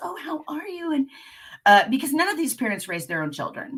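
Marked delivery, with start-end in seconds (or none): 0.0-0.9 soft, very high, gentle, sweet, sympathetic voice. Retelling a law firm mother ushering her in, the speaker imitates her soft voice. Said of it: "the head tilt and the soft voice".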